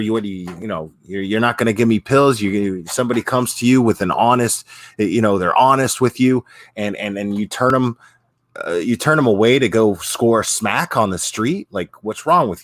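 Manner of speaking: ordinary talk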